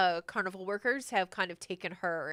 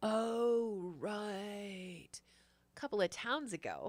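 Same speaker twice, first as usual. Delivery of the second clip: laid-back surfer voice, quieter; 7 dB quieter than usual. Voicing the player character remembering something for the player: surfer voice. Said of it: "You sound like a surfer".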